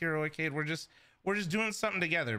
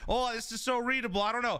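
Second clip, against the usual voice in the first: high-pitched mocking parody voice; 7 semitones higher than usual. Scolding a teammate, imitating the teammate's complaint mockingly. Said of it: "I don't wanna hear your goddamn voice going".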